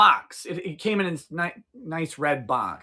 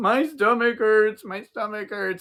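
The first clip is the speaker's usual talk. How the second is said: put-on high, tearful little girl crying in pain; 5 semitones higher than usual. Retelling a seven-year-old's complaint from bed: imitating a crying child. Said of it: "crying and screaming".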